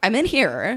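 loud, outraged, indignant tone. Acting out someone walked in on in a stall: indignant what-the-fuck tone. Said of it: "like, what the fuck tone".

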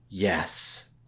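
soft, gentle, yet firm delivery. Showing how to say a word soft but firm. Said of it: "How do you say something softly but firmly? ... Like that".

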